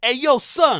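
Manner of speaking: brash, loud, pushy put-on New York accent. Speaker retells a random girl coming at a man in a video, put-on New York accent. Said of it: "in that New York accent".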